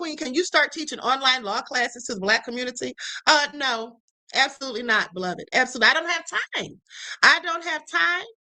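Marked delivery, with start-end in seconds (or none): none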